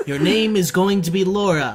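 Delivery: ordinary delivery, nothing marked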